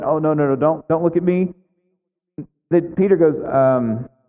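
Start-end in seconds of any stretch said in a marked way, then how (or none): 0.0-1.5 put-on fearful pleading tone. Voicing the woman hoping not to be noticed: acting out fear. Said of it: "fear in this woman who's about to be outed".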